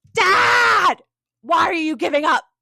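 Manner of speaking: very angry, loud, high-pitched shouting. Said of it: "Amethio gets really mad".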